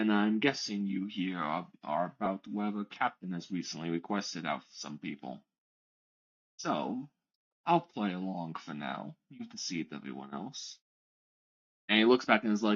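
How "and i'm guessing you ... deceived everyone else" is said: whisper, lower and quieter. Voicing the leader who secretly tells the players he knows they're lying: whispering in character. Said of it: "he just whispers to both your ears".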